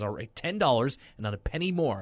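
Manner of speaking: ordinary talk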